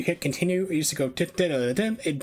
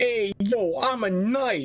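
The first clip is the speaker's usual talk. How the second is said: put-on Brooklyn street accent, pitched up; 8 semitones higher than usual. Mimicking knights in a terrible medieval movie, Brooklyn accent. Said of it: "everyone has like Brooklyn accents".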